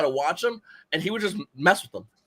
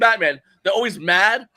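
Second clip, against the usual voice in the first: ordinary delivery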